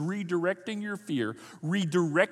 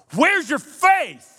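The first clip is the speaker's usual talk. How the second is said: harsh scolding, very high-pitched and loud; 10 semitones higher, 13 dB louder than usual. Speaker shows how they used to hear Jesus's words when reading, imitating a harsh rebuke. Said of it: "I would hear it kind of like this".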